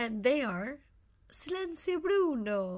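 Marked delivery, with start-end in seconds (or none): 1.3-2.8 pitched-up attempt at an Italian accent. Quoting a line from the movie Luca, trying the movie quote's accent. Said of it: "I tried to say it in the accent".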